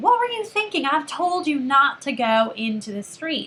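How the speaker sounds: high-pitched, angry scolding tone. Showing a parent reacting to a child heading into the street: angry parent scolding. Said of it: "it really sounds like you're angry with him".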